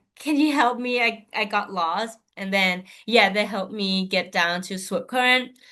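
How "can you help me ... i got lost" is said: ordinary talk, nothing marked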